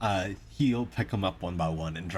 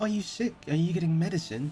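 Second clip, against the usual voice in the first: put-on high-pitched young girl voice; 10 semitones higher than usual. Voicing a young human girl who approaches the players: young human girl voice. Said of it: "you're approached by a young human girl".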